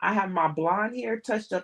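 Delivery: plain reading voice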